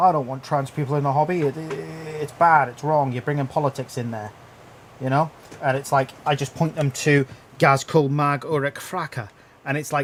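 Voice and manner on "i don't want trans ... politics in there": normal talking voice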